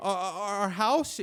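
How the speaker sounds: mock terrified, slow, high, halting stammer. Retelling missionaries being asked where their house is: imitating terrified missionaries. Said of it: "These missionaries are terrified".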